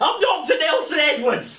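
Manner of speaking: very loud, very high acted character voice. Introducing his character from the Wednesday Fate game, in a loud Dr. Nelson Edwards voice. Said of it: "And I talk very loud".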